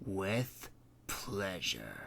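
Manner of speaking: very quiet, low, hushed bitter purr. Narrator voicing a queen's reply as the princess walks away, bitter purr. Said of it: "purred the Cat Queen bitterly".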